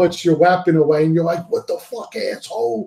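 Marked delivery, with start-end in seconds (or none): 1.5-2.9 imitated scream, higher pitch. Retelling the camera switching mid-battle: imitating own screaming at TV. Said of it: "I'm screaming at my T V".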